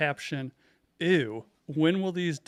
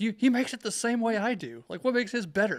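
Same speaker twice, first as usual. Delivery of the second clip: pitched-up, irritated, annoyed, put-out griping; 8 semitones higher than usual. Retelling the wife's complaint, imitating her getting pissed off. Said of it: "She gets all pissed off about it".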